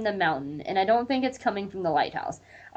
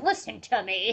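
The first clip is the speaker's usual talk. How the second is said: put-on fed-up, out-of-patience, exasperated outburst. Acting out a character fed up and trying to smack Cecil: imitating Dana fed up. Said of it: "fed up and just, like, try and smack Cecil".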